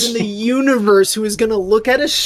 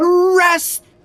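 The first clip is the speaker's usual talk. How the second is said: screaming in a put-on character voice; 9 semitones higher than usual. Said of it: "she just screams".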